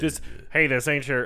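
attempted, put-on Alabama southern accent. Retelling a movie scene, attempting an Alabama accent. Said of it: "I can't do the thing Alabama accent".

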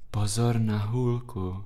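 quietest possible whisper. Narrator reads a character's warning to the one kissing him, whispering as quietly as possible. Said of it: "se šeptal Paprik, co nejtišeji dokázal".

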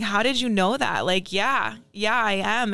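play-acted weepy, tearful, crying voice. Retelling meeting an older lady who knew her father: retelling own crying reply. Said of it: "And then I start crying right away".

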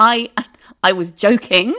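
stammering. In a story, a sister stammers while pulling away from her brother: stammering. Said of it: "she stammered".

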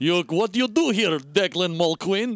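put-on Russian accent. Discussing scenes pairing Irish and Russian accents, one speaker quotes in a Natasha Fatale Russian accent. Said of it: "Natasha Fatale Russian accent".

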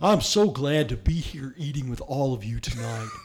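creepily warm, rounded, cult-leader-like speech. Recreating a cult leader's dinner blessing from a movie: Bill Paxton voice. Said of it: "I'm doing Bill Paxton in that".

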